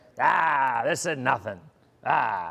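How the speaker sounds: very slow, put-on New England fisherman drawl. Imitating fishermen shrugging off the storm: new england fisherman voice. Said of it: "that's my New England fisherman voice".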